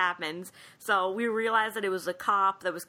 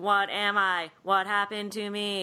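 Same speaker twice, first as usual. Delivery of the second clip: ordinary talk, nothing marked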